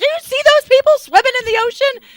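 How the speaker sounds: acted shrill, very high, loud angry twang. Retelling a groom's complaint during wedding photos, imitating angry Tiny, twang. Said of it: "angry Tiny with this twang".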